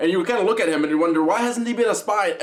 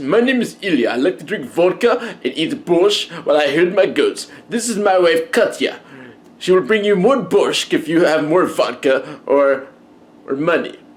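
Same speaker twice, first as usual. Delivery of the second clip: put-on Russian accent, tried on for size; 5 dB louder than usual. Trying out a possible opener, the speaker does a put-on russian accent. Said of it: "doing a Russian accent".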